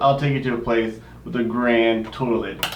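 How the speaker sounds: ordinary talk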